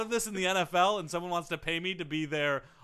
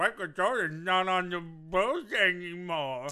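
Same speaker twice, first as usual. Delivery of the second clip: very slow, dragged-out mock voice. Retelling what Joe said about the Bulls: imitating Joe. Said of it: "I don't sound at all like that".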